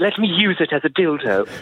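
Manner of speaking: silly put-on cartoon character voice. Joking about a riding crop, Stewie voice. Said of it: "I'm just doing a Stewie from Family Guy or something".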